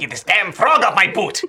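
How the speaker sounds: put-on little European man accent. Playing a character in a game, shouting at a frog: little european man accent. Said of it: "I love this little European man accent".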